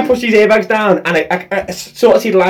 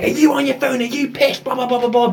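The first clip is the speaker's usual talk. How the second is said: put-on, high, hushed, kicking-off angry rant; 6 semitones higher, 5 dB quieter than usual. Retelling how the BMW driver confronted the VW driver after the airbags went off: retelling an angry rant. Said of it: "he's kicking off like".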